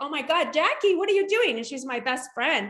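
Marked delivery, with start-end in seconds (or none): 0.0-1.6 frantic, high shriek of alarm. Retelling a car crash, screaming at the friend driving: retelling a scream. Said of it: "I'm screaming her name".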